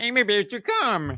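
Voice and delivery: failed frog-puppet voice. Speaker jokes about using a voice with Bobby, bad Kermit the Frog voice. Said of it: "I know that didn't sound like Kermit the Frog".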